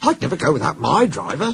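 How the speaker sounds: earnest. Narrator reading a train story, voicing toby's reply to the others: earnest. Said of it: "said Toby earnestly".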